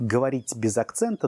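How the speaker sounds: ordinary talk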